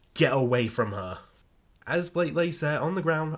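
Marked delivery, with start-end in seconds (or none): none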